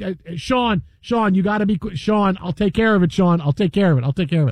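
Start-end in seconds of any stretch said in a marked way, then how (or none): none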